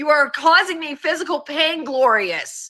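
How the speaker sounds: furious, angry yelling, pitched high. Speaker yells back at another person who keeps talking, furious yelling. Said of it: "Of course I'm going to fucking yell".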